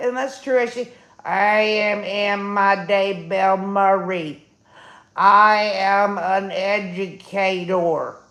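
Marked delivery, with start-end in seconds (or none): 1.2-8.1 very slow, flat robotic monotone. Redoing an impression after being told it should sound more robotic: robotic impression of Emma. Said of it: "You should have sounded more robotic".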